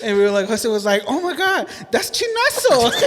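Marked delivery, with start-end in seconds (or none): 1.1-2.9 overdone, very high, slow, stretched-out.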